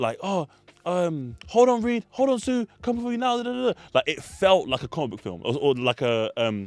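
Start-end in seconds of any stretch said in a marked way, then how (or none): 0.2-3.8 put-on screaming. Retelling how a film character acted while smashing things: imitating someone screaming. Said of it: "he was screaming, like".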